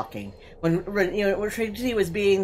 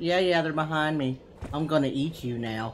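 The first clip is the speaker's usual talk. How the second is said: eerie, creepy, offhand casual tone; 4 dB quieter than usual. Retelling what the monster player said while chatting: imitating Keurig's creepy casual chat. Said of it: "you gave me the scariest shit of my life".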